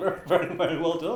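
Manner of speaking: mocking, overdone sarcastic tone. Praising the choreography to the others: sarcastic. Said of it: "This sounds very sarcastic".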